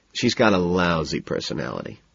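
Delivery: ordinary delivery, nothing marked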